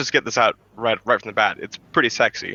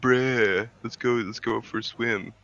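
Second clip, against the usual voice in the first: put-on stoner surfer voice, quieter; 6 dB quieter than usual. Describing how their own voice sounds to them; stoner surfer voice. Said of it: "Like stoner surfer kind of like".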